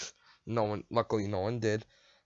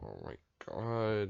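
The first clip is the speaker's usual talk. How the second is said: fed-up, irritated, pissed-off, annoyed exclamation; 7 dB quieter than usual. Retelling a fitting room trip with mom, imitating own pissed-off reaction. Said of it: "like pissed off and everything".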